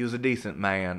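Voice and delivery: put-on generic Southern accent. Quoting a character's reply about a farmer: generic Southern accent. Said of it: "generic Southern one".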